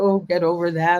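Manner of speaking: ordinary delivery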